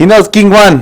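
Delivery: acted character yell, high and very loud. Voicing a character in a tabletop game: character yelling. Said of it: "and she yells".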